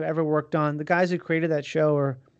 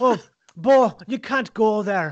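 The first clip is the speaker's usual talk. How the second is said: thick, heavy Irish accent, pitched up; 5 semitones higher, 3 dB louder than usual. Recall the Irish comedian reading with you in your hotel room, doing Andrew Ryan's thick Irish accent. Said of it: "What a thick Irish accent".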